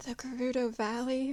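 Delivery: faint, hushed half-whisper. Playing a character who answers a faint voice by copying its half-whisper: half-whispering. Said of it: "copies the whisper".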